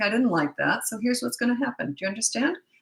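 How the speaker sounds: hushed, steady and calm. Demonstrating how to talk when disciplining: very quiet and calm. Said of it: "you talk like this".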